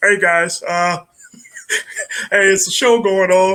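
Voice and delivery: put-on cartoon frog-puppet host voice. Imitating a former host who sounded like Kermit the Frog. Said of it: "the guy that sounded like Kermit the Frog".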